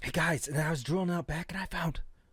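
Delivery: imitated hushed tone. Acting out villagers sharing news of finding resources: imitating hushed tones. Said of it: "in hushed tones".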